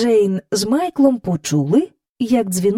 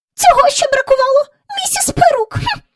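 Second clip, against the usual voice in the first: thin, very high, indignant squeaky voice; 4 dB louder than usual. A woman rushes off down the corridor, muttering to herself, in a thin squeaky voice. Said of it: "тонким пискливим голосом".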